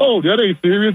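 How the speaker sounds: very high voice, talking through laughter. Retelling how the press secretary explained it: imitating someone laughing while talking. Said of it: "she was just laughing like".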